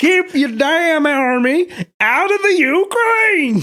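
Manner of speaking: put-on high, loud, slow bellowing yell.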